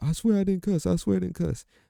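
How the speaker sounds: put-on very high kid's pleading cry, whooping.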